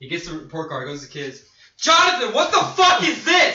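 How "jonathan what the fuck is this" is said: screaming at full blast, very high and shrill. Speaker acting out a man confronting the kid over a report card: acted-out loud yell. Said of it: "so I can yell loud as fuck".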